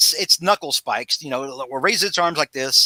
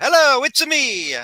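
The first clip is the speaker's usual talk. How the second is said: very high voice like a game character; 10 semitones higher than usual. Retelling how mom answers calls, imitating her Mario voice. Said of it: "Like she's Mario".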